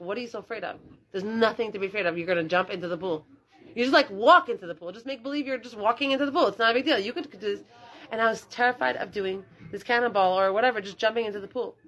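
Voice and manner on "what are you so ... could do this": ordinary talk, nothing marked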